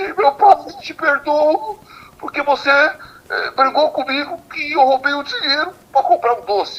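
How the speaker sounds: acted, very high screaming cry. Retelling a man at a talk who hugged him: imitating a man shouting. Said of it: "O cara me abraçou e começou a gritar".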